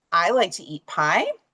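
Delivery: LIKE stressed with a rise.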